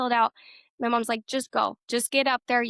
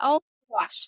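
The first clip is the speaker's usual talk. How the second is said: dazed, stunned, shocked disbelief. Retelling getting a call to be in a movie, acting out being in shock. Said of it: "Like in shock".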